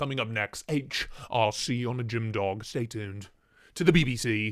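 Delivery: on-air broadcast continuity announcer voice. Announcing a viewer's question as the next show: BBC announcer voice. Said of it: "Sounds like a B B C, like, announcer".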